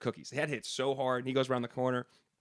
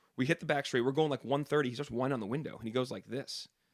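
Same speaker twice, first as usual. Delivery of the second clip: plain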